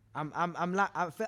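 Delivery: stuttering. Asked what makes him a man, he fumbles for an answer: stuttering. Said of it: "cause I'm s- I'm I'm I'm stuttering".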